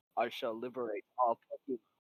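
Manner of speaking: soft, deep, serious voice. Discussing how Mewtwo should sound, saying his line: Mewtwo deep serious voice. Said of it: "a de- like deep serious voice".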